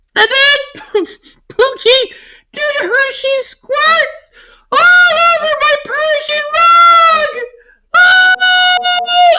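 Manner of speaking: ridiculous, very high, sing-song crying wail.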